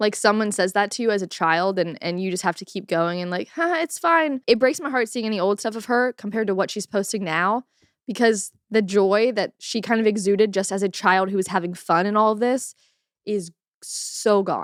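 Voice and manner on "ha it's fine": put-on, nervous, high, forced little giggle. Acting out a child pushed to keep going: imitating forced giggling. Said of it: "giggling is, is to not cry".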